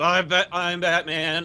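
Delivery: very slow, synthesized, zapped-sounding robotic electronic voice. Mocking a trailer's Batman voice as if generated by electrodes: imitating Batman's electronic-sounding voice. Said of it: "the Batman voice apparently generated by electrodes".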